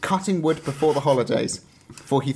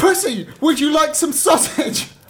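put-on very high, loud shriek; 12 semitones higher, 5 dB louder than usual. Telling of a troll poking sausage up a bear's nose, screaming. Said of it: "screaming out".

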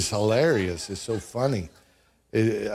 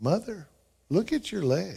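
very calm, even, unruffled, light-pitched voice; 8 semitones higher, 4 dB quieter than usual. Telling a family story, quoting Jonathan warning his mother: imitating Jonathan's calm voice. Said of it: "very calmly says".

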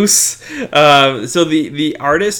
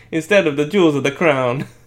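put-on Italian accent in English. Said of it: "Your accent was too good".

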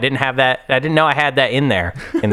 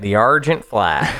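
put-on country Southern accent, lower; 3 semitones lower than usual. Speaker trying out a name with a co-host, in a Southern accent. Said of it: "hard to not say Argent Flight in a Southern accent".

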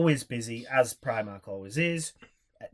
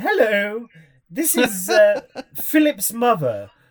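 put-on over-the-top old nanny voice, high and slow; 9 semitones higher, 9 dB louder than usual. Retelling a call from Philip's mother, in an over-the-top David Walliams-style nanny voice. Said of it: "like an old nanny show".

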